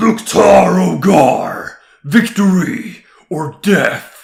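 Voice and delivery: booming, very slow, loud, drawn-out evil monster voice. Demonstrating voice techniques, showing how to sound like an evil monster. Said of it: "sound more like some evil monster".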